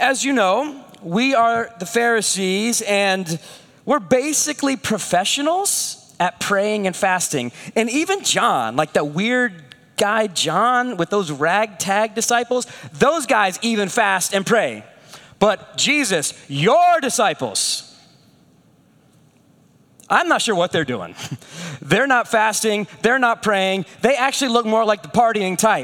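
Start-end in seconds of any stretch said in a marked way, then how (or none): none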